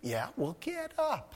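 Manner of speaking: gentle, high divine voice.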